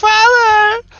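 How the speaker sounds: very high, loud scream. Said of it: "his wife and daughter are screaming".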